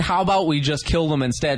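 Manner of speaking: ordinary talk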